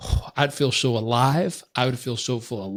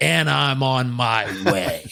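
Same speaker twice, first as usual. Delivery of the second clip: put-on angry woman's voice. Retelling a phone call with Mom: imitating mom's angry tone. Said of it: "you never wanna hear in this voice and tone".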